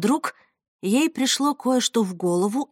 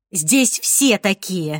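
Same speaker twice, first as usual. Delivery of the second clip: annoyed, irritated tone, irritation showing; 4 semitones lower than usual. A woman being questioned about another woman's looks answers, irritated. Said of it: "раздраженно ответила Ирен".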